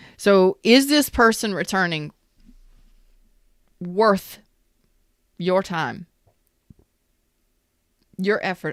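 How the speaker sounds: speech interrupted by hiccups. Giving advice on whether someone is worth the effort, hiccupping. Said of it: "I've got so many hiccups".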